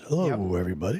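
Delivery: velvet-voiced broadcaster voice, smooth and warm. Greeting everybody in a velvet voice like Steve Thorne. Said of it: "Got that nice velvet voice".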